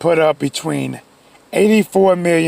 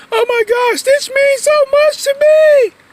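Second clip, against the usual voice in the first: very high, tearful, drawn-out crying voice; 3 dB louder than usual. Retelling an ex-girlfriend's birthday party: imitating someone crying. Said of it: "So she started crying".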